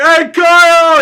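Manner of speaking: very loud, shrill, high-pitched screaming shout. Retelling how an uncle came down and called out: imitating someone screaming. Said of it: "He's, like, screaming at him".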